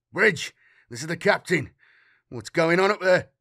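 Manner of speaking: panic held under control. A ship's captain calls the bridge over a Voxcom during an attack, hiding panic. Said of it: "fighting to hide the panic in his speech".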